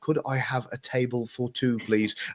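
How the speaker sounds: slow, careful, drawn-out, over-enunciated English, every word shaped. English speaker shows how he slowed down when out in america, slowed-down english. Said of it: "I would slow down".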